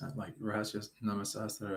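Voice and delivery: ordinary talk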